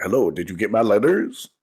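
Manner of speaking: mock straight-laced, unfriendly businesslike tone. Mocking how another speaker greets people: imitating a straight-laced, unfriendly tone. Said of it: "there's no friendship in that tone".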